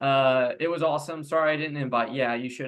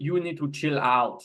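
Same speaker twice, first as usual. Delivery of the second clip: bad, put-on, laid-on Austrian accent. Telling Kyle to look up Batman and Robin, quote the film in Mister Freeze's Austrian accent. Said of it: "he's got his Austrian accent, and he goes".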